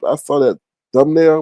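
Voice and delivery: ordinary talk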